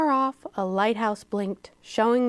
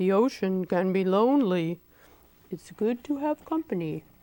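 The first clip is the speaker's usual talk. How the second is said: ponderous, deep, slow giant whale voice; 4 semitones lower than usual. Reading a story aloud, a whale carrying a boat speaks, deep, slow whale voice. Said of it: "He said in a deep, slow whale voice".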